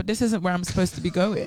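plain

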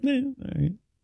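high, soft, unimpressed, shrugged off. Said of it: "when somebody gets hired and you go".

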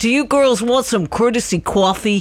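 strong put-on New York Bronx accent. Recalling a man doing a concert there, the speaker imitates his bronx accent offering coffee. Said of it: "He had such a Bronx accent".

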